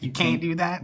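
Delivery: put-on country accent. Retelling how a very country friend says can't; imitating his country accent. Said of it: "very country, instead of saying can't, would say Caint".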